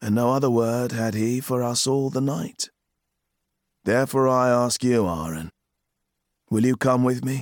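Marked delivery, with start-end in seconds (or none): none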